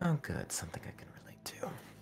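muttering. Celsus replies to the other character's complaint, mumbling. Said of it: "just kind of mumbles".

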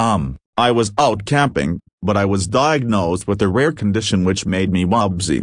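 ordinary delivery

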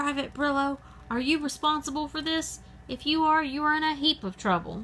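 high-pitched drill sergeant yelling. The drill sergeant confronts Private Brillo about the skunk, yelled. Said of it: "the drill sergeant yelled".

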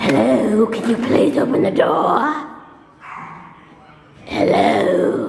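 put-on heavy smoker's voice, not her own.

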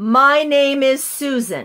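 very loud, full, slow, supported voice, never harsh. Leading a group voice exercise, demonstrating the sentence: loud but not harsh. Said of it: "The objective is to be loud".

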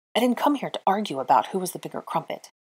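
plain

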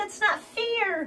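high, loud, whiny protesting tone.

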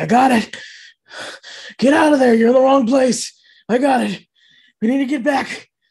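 anguished, desperate cry, very loud and high. Game narrator voicing Anarhk over a communication device, pained and desperate. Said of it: "a very pained, desperate voice comes over".

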